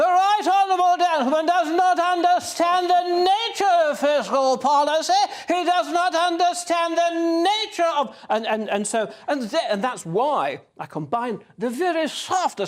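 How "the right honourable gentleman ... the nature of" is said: declaimed big, loud and high-pitched. Showing how the puppet voice added power: Margaret Thatcher House of Commons voice. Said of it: "the House of Commons voice, obviously, is bigger".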